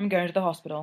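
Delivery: plain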